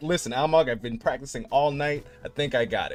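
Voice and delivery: ordinary talk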